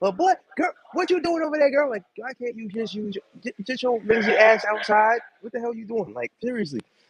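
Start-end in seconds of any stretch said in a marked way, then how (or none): 0.1-6.1 yelling, pitched high. Describing new york neighbors calling out: imitating someone yelling out a window. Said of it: "people yelling out their windows".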